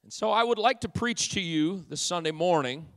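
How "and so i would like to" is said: ordinary delivery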